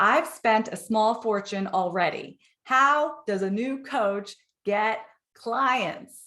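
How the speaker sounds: pressing, pointed delivery with heavy emphasis. Retelling a group member's posted question: emphatic voice imitating Janice. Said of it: "Can you hear the emphasis in her voice?".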